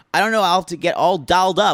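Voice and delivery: high, weird, put-on Canadian accent. Retelling what the captain said about the party, put-on Canadian accent. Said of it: "my weird Canadian accent that I gotta put on".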